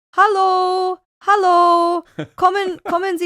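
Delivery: very high, slow, sweet-talking, coaxing, pleading German voice. Retelling a TV show, imitating German firefighters coaxing a cat out of a tree. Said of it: "German firefighters ... going like".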